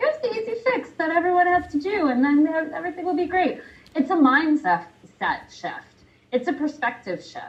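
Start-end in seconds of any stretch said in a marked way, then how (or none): 0.0-3.6 high, bright mock pitchman voice. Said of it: "I wish I could just be like".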